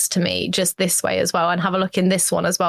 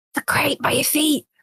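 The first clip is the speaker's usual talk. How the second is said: loud, high stage whisper; 7 semitones higher than usual. Calling across to Ronson from the next building, in a loud whisper. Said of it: "in a loud whisper".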